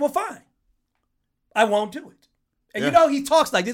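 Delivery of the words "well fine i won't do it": slow, halting delivery with long, frequent pauses. Retelling how a man finally gave in and refused, slow with big pauses. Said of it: "Big pauses and everything".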